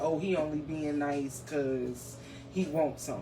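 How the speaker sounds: usual speaking voice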